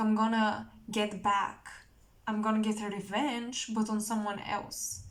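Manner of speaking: ordinary talk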